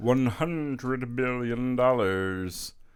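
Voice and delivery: very slow, deliberate, pronouncing delivery. Giving a figure in a Doctor Evil impression. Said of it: "That was my Doctor Evil impression".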